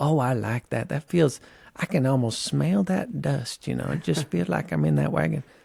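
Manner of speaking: put-on faint, slight Southern or Utah country accent. Retelling what gallery visitors said: imitating a slight Utah Southern country accent. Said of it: "slightly kind of Utah, maybe even, like, uh, Southern accent".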